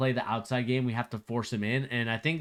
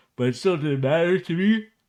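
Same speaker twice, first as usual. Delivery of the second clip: talking through a loud, high yawn, words stretched; 6 semitones higher, 7 dB louder than usual. After a long day, excuse yourself while talking about the game, yawning. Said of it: "excuse me as I'm yawning".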